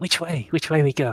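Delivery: whispering. Voicing a character asking the others which way to go: whispering. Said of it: "just whisper to them".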